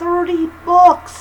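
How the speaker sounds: high, slow, loud, stretched-out thrilled cry.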